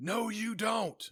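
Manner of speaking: very loud, very high, shrill, combative belligerent yell. Retelling what a mom from the other team yelled during the game: mock belligerent yell. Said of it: "yells in a rather belligerent tone".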